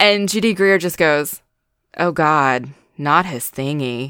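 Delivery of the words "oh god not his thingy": put-on deadpan sarcasm, slower. Quote a favourite reaction from an actress playing a character, imitating Judy Greer, deadpan and sarcastic. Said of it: "it's so deadpan and sarcastic".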